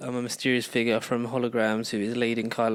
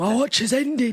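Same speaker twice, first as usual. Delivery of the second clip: loud, very high voice; 12 semitones higher, 6 dB louder than usual. Quoting a line while discussing the films: Jon Snow voice. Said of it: "He said it in a Jon Snow voice".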